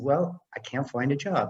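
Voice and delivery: ordinary talk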